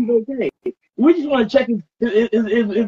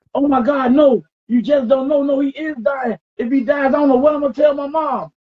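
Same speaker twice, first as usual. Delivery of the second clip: put-on panicked ranting; 3 semitones higher than usual. Speaker retelling his friend's reaction to the brother overheating, imitating Tyree's panicked rant. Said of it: "He can see rant going on saying".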